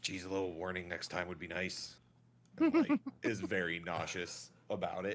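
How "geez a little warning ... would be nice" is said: quiet aside muttered under the breath. Voicing Orlo after a sudden change, muttered under his breath. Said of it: "just kind of like under his breath".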